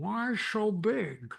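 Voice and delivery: Upper Midwest Minnesota vowels. Retelling how John turned to the speaker and asked a question, in John's Minnesota accent. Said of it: "he said in his Minnesota accent".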